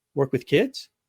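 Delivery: put-on upward rising pitch on the word kids. Demonstrating repeating someone's last words: rise on kids like a question. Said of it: "With an upward intonation like it's a question".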